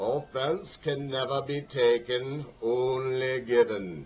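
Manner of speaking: bad put-on English accent. Quoting a great Englishman on offense, horrible Winston Churchill accent. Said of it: "I know that was a horrible accent".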